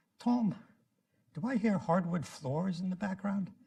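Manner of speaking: clumsy, fake British accent. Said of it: "my horrible British accent".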